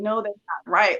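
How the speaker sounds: ordinary talk, nothing marked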